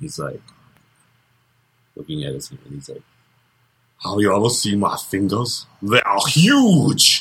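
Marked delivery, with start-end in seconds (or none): 4.0-7.2 put-on stoned, spaced-out strongman voice, swooping pitch. Retelling a comedian's bit about a high Arnold Schwarzenegger: Arnold Schwarzenegger voice. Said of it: "That's my Arnold impression".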